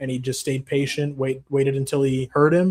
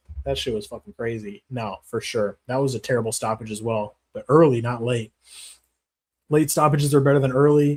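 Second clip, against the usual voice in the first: ordinary talk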